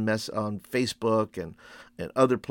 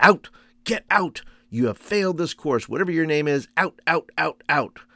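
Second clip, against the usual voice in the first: acted-out yell, much higher; 6 semitones higher, 6 dB louder than usual. Recounting how a Tennessee professor threw students out, imitating a yelling professor. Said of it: "He just yelled at us".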